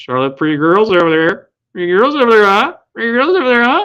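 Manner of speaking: very high, loud, squealing comic voice. Retelling how a friend teased across the room in a Chris Farley voice. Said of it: "a Chris Farley voice".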